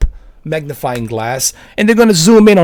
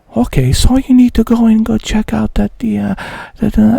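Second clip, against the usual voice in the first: polite, pleasant, pitched-up, level little tone; 5 semitones higher than usual. Mocking how Digital Foundry would tell viewers what to check: imitating Digital Foundry's nice little tone. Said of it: "in their nice little tone of voice".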